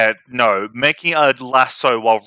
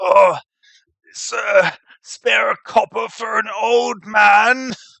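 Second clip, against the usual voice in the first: put-on very high, very slow, pleading old beggar voice; 10 semitones higher than usual. Voicing a beggar who approaches a player begging: old beggar voice. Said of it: "he kinda goes up to you and goes".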